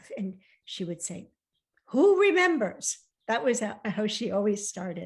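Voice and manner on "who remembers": very high, very loud, gruff and dismissive. Retelling a grandmother's usual reply to questions: gruffly imitating Nana. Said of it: "very gruffly".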